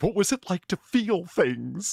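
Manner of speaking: dopey dumb guy voice. Imagining someone playing a dumb guy: imitating a dumb guy. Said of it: "[name] playing the dumb guy going".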